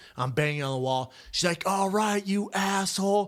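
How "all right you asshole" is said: top-of-the-lungs furious yelling, drawn out, sounding muffled. Retelling a man's wife shouting at him through the wall, retelling a woman's shouting. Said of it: "shouting the top of her lungs".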